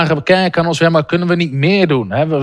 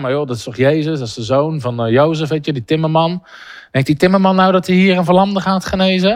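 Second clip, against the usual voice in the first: ordinary delivery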